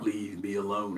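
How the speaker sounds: very low, quiet, soft rumbling voice. Recalling a movie scene, quoting the voice from the dark, in Hulk's rumbling voice. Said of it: "that rumbling voice come out of the out of the dark".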